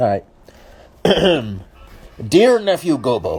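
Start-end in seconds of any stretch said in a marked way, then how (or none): 1.0-3.4 put-on puppet voice. Doing a letter to Nephew Gobo: Uncle Traveling Matt voice. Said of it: "That's my impression of Uncle Traveling Matt from Fraggle Rock".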